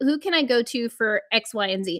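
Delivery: normal talking voice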